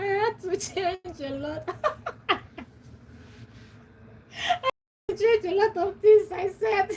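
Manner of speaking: high-pitched, helpless laughter through the words.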